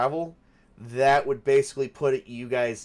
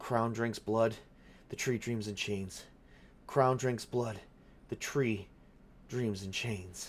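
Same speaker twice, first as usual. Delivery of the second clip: muttering to himself, quieter; 8 dB quieter than usual. Voicing a man in a corner, rocking back and forth: mumbling to himself. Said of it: "and he's mumbling something".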